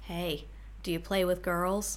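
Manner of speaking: creepy, soft, low, quiet murmur. Retelling what a man said as he passed her, imitating a creepy, soft voice. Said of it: "very creepily, very softly said".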